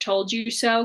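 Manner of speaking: ordinary talk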